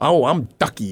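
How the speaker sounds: heavily sarcastic, very sarcastic tone. Retelling what a busy dean always said: imitating a sarcastic dean. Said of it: "very sarcastic 'cause she's so busy".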